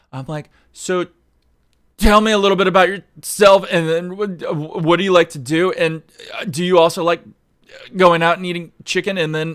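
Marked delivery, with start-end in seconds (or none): 0.7-9.1 loud, halting stutter, tripping over words. Imitating own dates' small talk: imitating own stuttering. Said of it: "I stutter through my sentences".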